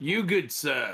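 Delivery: sudden put-on British accent. Playing a character in a tabletop game, approaching a man and greeting him: British accent. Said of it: "where'd that British accent come from".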